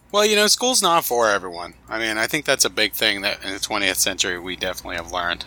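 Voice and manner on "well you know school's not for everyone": high-pitched, sarcastic quip. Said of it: "I'm literally being sarcastic".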